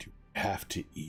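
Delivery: rumbling, crashing voice. Narrator voices a figure the listeners hear as they walk away, in a rumbling waterfall-like voice. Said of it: "a rumbling voice that sounds like a, a waterfall, like hitting rocks".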